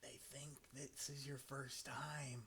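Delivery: very quiet, soft, barely audible whisper. Voicing a character who puts a hand on a shoulder: whispering. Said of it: "just whispers".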